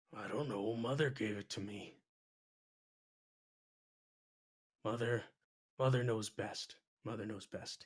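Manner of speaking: low, very quiet, barely audible mumble. An orc asked about his talisman answers, muttering under his breath. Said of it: "He says and just kind of rocks in place".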